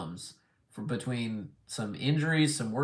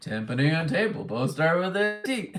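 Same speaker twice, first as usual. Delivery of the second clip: big, cartoon bear character voice; 5 semitones higher than usual. Reading a message aloud, in a Yogi Bear voice. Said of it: "I'm reading that in like a Yogi Bear voice".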